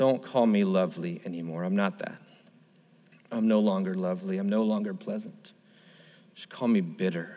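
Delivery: put-on aching, grieving, pained and sorrowful tone. Voicing Naomi telling the women to call her bitter: Naomi's pained voice, acted out. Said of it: "can you hear the pain?".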